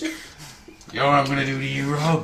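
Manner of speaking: rough, gruff, put-on wrestler-style American accent. Imitating a character named Logan Blaze: gruff American accent. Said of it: "gruff American accent".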